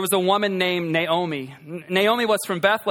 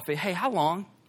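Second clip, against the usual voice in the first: gentle, easygoing, casual delivery; 6 dB quieter than usual. Asking a question as though chatting over coffee, casual, not harsh tone. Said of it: "this is not a harsh tone... as though we were over coffee".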